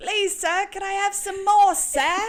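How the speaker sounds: put-on British accent, very high pitched and loud. Joking about saying lines in a British accent, the speaker does an Oliver Twist voice. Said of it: "Yours is like um, Oliver Twist".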